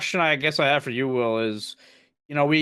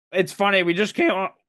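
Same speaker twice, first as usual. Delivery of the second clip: voice breaking in pitch, higher; 4 semitones higher than usual. Starting to compare with a just-recorded episode about the Dodgers: voice cracking. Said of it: "wow, voice crack".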